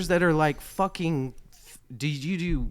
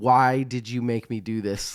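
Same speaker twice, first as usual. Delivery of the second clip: ordinary delivery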